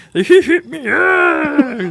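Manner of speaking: bad piggy voice, high, loud squeal.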